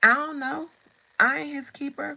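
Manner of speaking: very loud, full of attitude. Reading the Cain and Abel story aloud, voicing Cain: Cain with an attitude. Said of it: "He already had an attitude".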